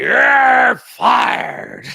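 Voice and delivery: very loud, high, rough, raspy bark. Trying out an impression while talking about pro wrestling: Vince McMahon impression. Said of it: "my good Vince McMahon impression".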